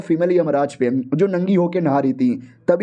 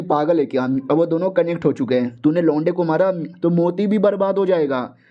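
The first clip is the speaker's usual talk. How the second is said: usual speaking voice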